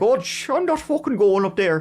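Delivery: put-on Irish accent. Narrating a murder case, quoting a woman in the house; Irish accent. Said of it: "I'm doing my Irish accent".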